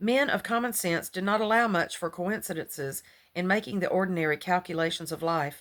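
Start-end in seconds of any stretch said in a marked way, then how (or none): none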